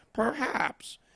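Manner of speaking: breathy, hushed, soft cartoony voice. Repeating a meme caption, Peter Griffin impression. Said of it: "that's my Peter impression".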